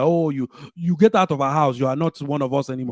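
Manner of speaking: put-on Nigerian accent, held throughout. Imitating someone telling the speaker to get out: imitating a Nigerian accent. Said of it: "Can you talk in that accent".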